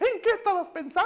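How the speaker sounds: high, loud scolding.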